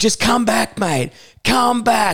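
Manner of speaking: put-on very high, shrill calling-out scream. Retelling how staff screamed at a man fighting the elevator, imitating staff screaming. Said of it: "staff are screaming at him".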